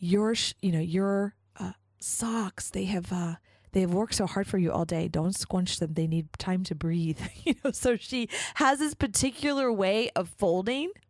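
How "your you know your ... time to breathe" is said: put-on little voice, Japanese accent. Describing a woman's sock-folding method, the speaker quotes her in a little Japanese-accented voice. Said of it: "in her little like Japanese voice".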